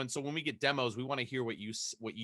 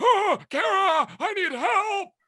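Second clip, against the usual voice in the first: put-on shrill, very high, loud, dragged-out kid voice; 11 dB louder than usual. At a panel, a guest retells calling kara for help: younger-brother character voice. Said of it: "So that voice".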